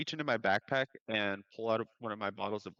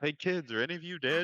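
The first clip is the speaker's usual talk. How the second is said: pitched-up voice calling across a distance; 6 semitones higher than usual. Calling out in character to kids across the room: yelling across the room. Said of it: "I yell across".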